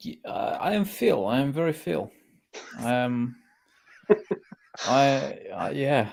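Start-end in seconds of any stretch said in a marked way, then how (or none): 0.0-2.1 slight put-on Russian accent, pitched up. A guest answers the host's how-are-you in a slight Russian accent. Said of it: "like a little Russian accent?".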